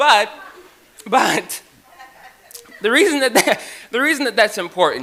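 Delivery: loud, high speech with laughter through words.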